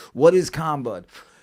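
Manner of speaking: ordinary delivery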